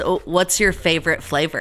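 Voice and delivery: ordinary talk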